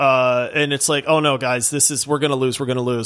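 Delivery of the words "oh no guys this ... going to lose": ordinary delivery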